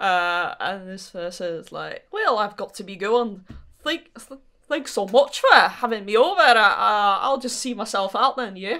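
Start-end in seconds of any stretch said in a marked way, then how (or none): 2.1-8.8 put-on Scottish accent throughout. Voicing a character who says goodbye and leaves: Scottish accent. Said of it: "this clearly Scottish person".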